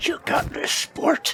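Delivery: hushed, breathy whisper under the breath. Playing a creature perched over a player, whispering encouragement: whispering. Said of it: "I just whisper to Lance".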